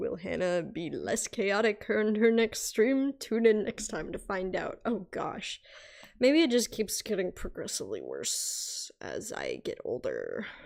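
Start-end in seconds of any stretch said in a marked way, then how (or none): 0.0-4.8 television announcer, narrator-style read. Drawing on stream, a streamer switches into a tv narrator voice. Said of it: "T V narrator voice".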